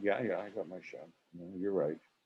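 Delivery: very quiet, utterly unruffled, calm delivery. Retelling the director's reply after he stopped: imitating someone speaking calmly. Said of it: "literally quite calmly went".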